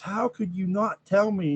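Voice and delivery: high, high-pitched screaming. Retelling a phone call where the caller screamed at the writer, imitate someone screaming. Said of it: "she's screaming at him".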